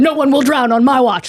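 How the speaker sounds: intense, unhinged, zealous paladin voice. Acting out a paladin with a lifeguard floaty sword: intense lunatic paladin voice. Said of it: "he's, like, a, a lunatic".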